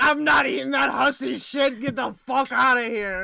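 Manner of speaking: loud, crude, rude, dismissive tone. Joking about the shredder turning on, voicing the shredder. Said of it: "the shredder looked at you and was like".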